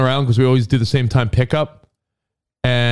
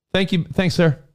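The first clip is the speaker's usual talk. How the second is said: usual speaking voice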